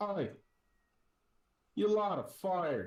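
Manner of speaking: very high, shrill, loud ship captain's yell. Describing a scene to the group as the captain calls out, yelling ship captain. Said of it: "hear the captain's voice yell out".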